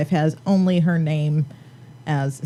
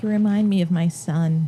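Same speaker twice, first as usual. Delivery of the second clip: ordinary talk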